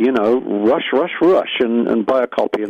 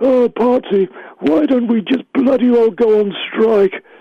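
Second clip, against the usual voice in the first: very high-pitched put-on voice; 12 semitones higher than usual. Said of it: "I'll do his voice as well".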